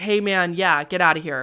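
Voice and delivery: ordinary delivery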